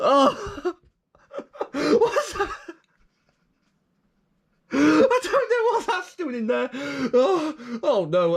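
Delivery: talking through laughter. Finding a charging brick in a box, laughing while talking. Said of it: "I've got to stop laughing".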